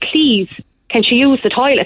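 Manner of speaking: usual speaking voice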